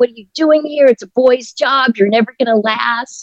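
high, mild mock yell. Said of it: "a customer yell at me".

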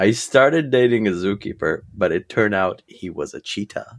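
plain

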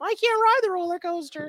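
put-on very high childish voice. Joking about a show's rookie characters, a speaker imitates one in a Gridiron Heights rookie baby voice. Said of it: "the rookies have like the baby voices".

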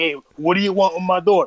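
big, burly, tough Italian dad voice. Imagining her dad answering the door: big buffy italian dad voice. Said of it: "this big, buffy, like, you know, Italian dude".

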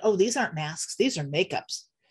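put-on indignant voice. Retelling costumed guys' answer about their masks: imitating an indignant reply. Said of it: "they looked at me all indignant".

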